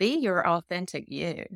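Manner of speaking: usual speaking voice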